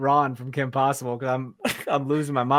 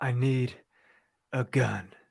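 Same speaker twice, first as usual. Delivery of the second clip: very slow, deliberate, word by word; 5 dB quieter than usual. Joking about playing John Wick with wet hair: John Wick voice. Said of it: "That's how he talks".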